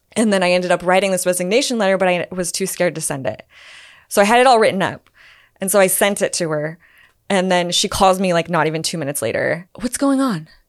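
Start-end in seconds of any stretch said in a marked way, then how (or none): 9.8-10.4 sweet, extra-nice, high voice. Retelling her call right after the resignation letter: imitating a really nice voice. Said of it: "using her, like, really nice voice".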